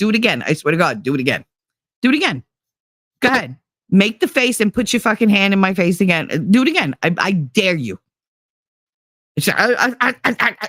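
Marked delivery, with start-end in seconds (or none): 0.0-8.0 put-on angry, threatening voice. Retelling jumping up to confront a daughter: retelling a threatening confrontation. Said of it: "out of my fucking chair and up in her face".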